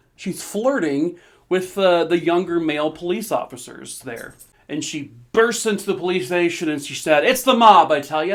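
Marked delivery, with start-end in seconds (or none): 7.3-8.4 very loud, belted put-on 1920s-style old-time voice. Quoting a woman bursting into a police station, put-on 1920s-style voice. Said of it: "Why am I doing a twenties voice?".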